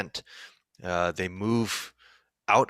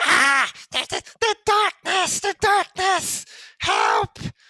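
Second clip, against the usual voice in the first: very high, loud, frantic, panicked goblin screech; 7 dB louder than usual. A game master voices a goblin yelling out to the players. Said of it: "the goblin yells out".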